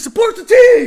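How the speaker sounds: very high, very loud furious shout. Retelling how a man at the kickoff turned and shouted at the crowd, retelling an angry yell. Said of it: "He was like angry at all of us".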